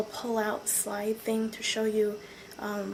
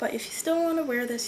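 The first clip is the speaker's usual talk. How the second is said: plain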